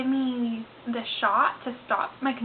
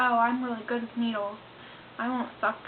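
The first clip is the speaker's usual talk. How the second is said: ordinary delivery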